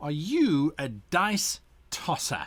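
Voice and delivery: slow, slightly venomous, hostile edge. Host opening an episode on being a great player, a little venomous. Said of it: "with a little bit of venom in my voice".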